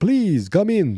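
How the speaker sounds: loud, high vampire voice. Retelling a movie scene, voicing a character on the balcony, in a Dracula voice. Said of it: "I don't know why I sound like Dracula now".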